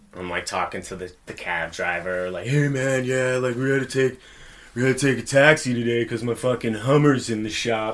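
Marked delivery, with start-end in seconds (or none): 2.5-8.0 put-on drunk cool-guy voice, higher pitch. Retelling talking to a cab driver at fifteen: imitating his drunk self trying to sound cool. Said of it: "I'm all drunk, like, fucking fifteen, trying to sound like I'm cool".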